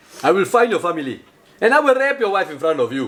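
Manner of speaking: put-on movie-villain South African accent. Trading accents, quoting a movie line in a South African accent. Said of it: "that's South African".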